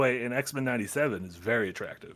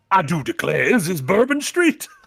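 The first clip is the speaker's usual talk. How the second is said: put-on Cajun drawl, higher and louder; 6 semitones higher, 6 dB louder than usual. Imitating Gambit arriving somewhere strange: imitating Gambit's Cajun accent. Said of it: "Gambit gets transported".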